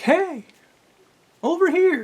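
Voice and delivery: very high thrown voice, sounding from another room. Retelling hearing a woman's voice from the bathroom, imitating a thrown voice like Navi. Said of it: "she's throwing her voice like this".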